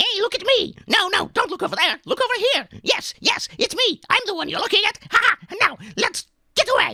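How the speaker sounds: squeaky goblin voice through the nose. Demonstrating how to voice a small goblin character: high nasal goblin voice. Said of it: "that sort of very high voice, very nasal".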